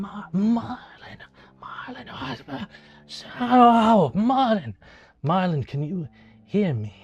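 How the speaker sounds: slow, drawn-out, echoing call, sounding far away. The narrator voices a voice calling Marlon from a void: distant echoing Master Larkspur voice. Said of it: "it feels kind of distant".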